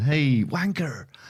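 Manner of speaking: high, breezy, matey, chummy, jovial voice. Describing how people in the office say the word: mock-jovial 'hey, wanker'. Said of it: "they say it in a way that it's jovial".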